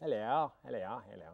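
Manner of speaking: exaggerated English accent. Showing how his attempts at his wife's accent come out, parody English accent. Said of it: "it sounds like a parody".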